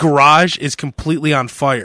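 ordinary delivery

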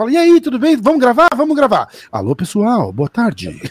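sing-song on-air radio announcer patter. Showing how a radio announcer starts talking: radio announcer voice. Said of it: "bem rádio".

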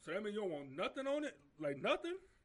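play-acted stunned incredulous disbelief, high and loud. Retelling a fast-food worker's reaction to a plain cheeseburger order: imitating someone in disbelief. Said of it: "couldn't believe it".

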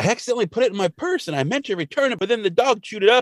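very high, rushed, panicked rattling. Retelling a scene where Marge Simpson panics about a pin: imitating Marge Simpson panicking. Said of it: "And Marge panics".

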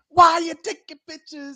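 put-on woman yelling. Retelling a homeowner chasing them over photos: imitating a woman yelling. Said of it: "The woman's yelling".

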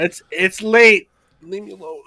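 shouting far from the mic. Late-night voice chat, far from the microphone, yelling from across the room. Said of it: "You're yelling into it from across the room".

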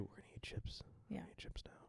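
soft ASMR whisper in announcer voice. Joking about eating chips on the podcast: imitating an ASMR announcer. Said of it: "the A S M R, like, person who, who announces what they're gonna do".

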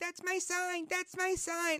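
put-on very high squeal like a little kid. Retelling a video of a girl ripping his sign, imitating him squealing like a kid. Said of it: "He's squealing like a little kid would".

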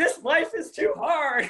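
acted crying scream. Recalling an irritable day with a then boyfriend, retelling screaming at the sky. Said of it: "like crying, like screaming at the sky".

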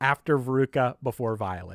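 ordinary delivery

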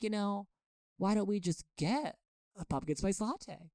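very sweet-voiced, sweetly offered delivery. Retelling what a friend suggested during a hissy fit: imitating Joy's sweet voice. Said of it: "She talks in a very sweet way".

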